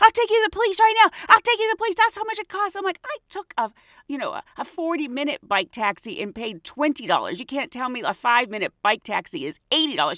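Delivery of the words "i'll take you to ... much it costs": put-on heated, high, angry yelling and screaming. Retelling a fare dispute with a bike taxi driver, imitating a man yelling. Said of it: "he starts yelling and screaming at me saying".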